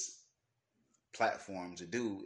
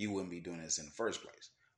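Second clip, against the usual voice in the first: ordinary delivery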